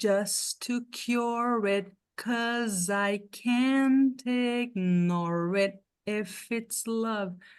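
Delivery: very slow, deliberate, drawn-out slow-motion delivery. Teacher says an English sentence for the students, in slow motion. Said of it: "Eu vou falar a frase em câmera lenta para vocês".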